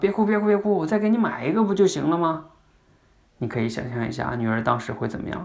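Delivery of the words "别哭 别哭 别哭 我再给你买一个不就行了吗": higher-pitched, flustered pleading tone. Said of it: "就更，更着急了".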